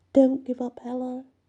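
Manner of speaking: small, high-pitched little mouse voice. Gustav speaks to Ella from nearby, in his little mouse voice. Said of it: "he says in his little mouse voice".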